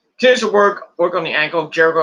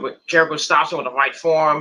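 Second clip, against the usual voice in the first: ordinary talk, nothing marked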